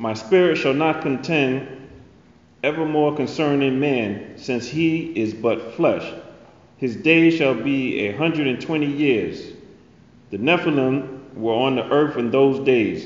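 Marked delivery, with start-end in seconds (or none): none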